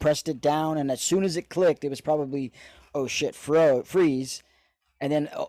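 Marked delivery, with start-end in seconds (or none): none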